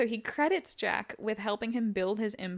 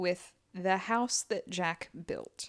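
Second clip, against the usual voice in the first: skeptical tone with audible air quotes around phrase; 3 semitones lower than usual. Telling a story, voicing quotation marks around a phrase: audible air quotes. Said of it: "I hope you can hear the quotes in my voice there".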